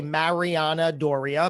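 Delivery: mariana doria pronounced with American pronunciation. Showing how an American might pronounce the guest's name: American pronunciation of Mariana Doria. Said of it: "an American like me might say".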